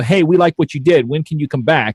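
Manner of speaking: ordinary talk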